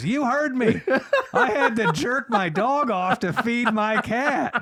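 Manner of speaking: put-on shrill, high, slow, drawn-out holler. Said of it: "the homeowner hollers down again".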